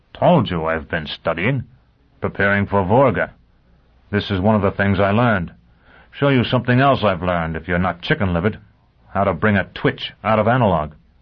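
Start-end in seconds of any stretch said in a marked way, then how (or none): none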